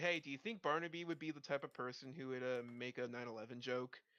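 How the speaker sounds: usual speaking voice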